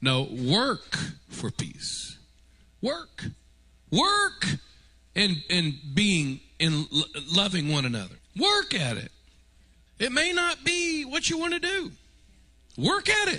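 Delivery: climbing, swooping pitch. Speaker talking about church, voice creeping higher. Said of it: "Why is my voice getting higher?".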